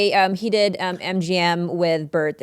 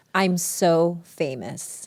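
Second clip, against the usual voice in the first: ordinary delivery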